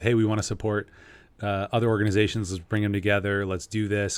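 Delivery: normal talking voice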